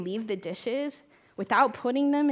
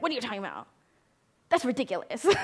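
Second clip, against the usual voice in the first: put-on dismissive, disapproving parent voice, swooping pitch. A speaker recalls the parent voice they hear in their head, in parent voice. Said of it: "I hear parent voice being like".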